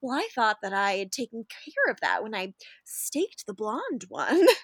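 smarmy, falsely earnest, faux-sincere delivery. Imitating how Damon acts like Eddie Haskell; mock-sincere Damon impression. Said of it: "the way Damon is faux sincere".

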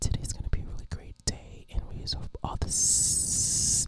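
breathy ASMR whisper, every S hissed. Explaining asmr videos to friends, imitating an asmr voice with hissed s's. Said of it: "they do a lot of, like, the S's".

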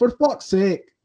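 very high, badly done British accent. Repeating how a good friend's cousin says it, in a bad accent. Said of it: "It's just my bad accent".

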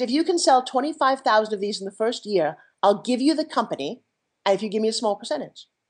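usual speaking voice

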